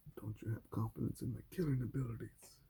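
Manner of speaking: put-on dog voice. Retelling what she says for the dog when they consider another dog, dog voice. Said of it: "in her dog voice and says".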